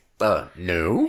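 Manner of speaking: put-on gruff English gentleman accent. Retelling a personal security guard's answer at the trial: imitating a gruff English gentleman. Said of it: "you can tell that he's a gruff English gentleman".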